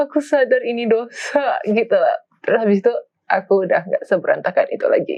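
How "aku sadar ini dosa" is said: high, slow, tearful, crying voice. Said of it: "Baru tuh aku bener-bener nangis".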